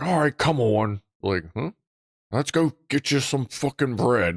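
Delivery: angry, resentful, grudging grumble. Retelling how an always-angry guy handed out bread: imitating an angry man. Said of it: "he'd still be angry about it".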